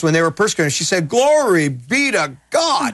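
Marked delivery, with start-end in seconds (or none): 1.1-2.9 very slow, high Southern drawl, every word stretched. Retelling her words when persecuted: Gloria Copeland Southern drawl. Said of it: "in her Southern drawl".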